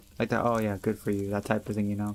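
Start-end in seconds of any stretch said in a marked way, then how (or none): 0.4-1.3 mocking sarcastic tone, lower pitch. Explaining how a remark came across to them, sarcastic. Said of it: "sounded very sarcastic".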